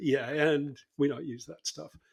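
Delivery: mock muttered aside under the breath. Retelling an aside after telling students to put their toys aside: imitating muttering under breath. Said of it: "under my breath".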